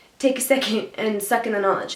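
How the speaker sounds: plain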